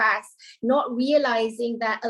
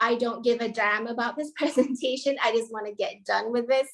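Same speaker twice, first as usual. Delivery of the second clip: ordinary delivery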